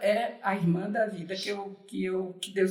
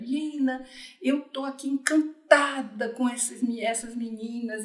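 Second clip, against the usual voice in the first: tiny, sweet little voice; 4 semitones higher than usual. Retelling a friend's phone call about the videos: imitating Leila's little voice. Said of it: "ela fala com essa vozinha assim".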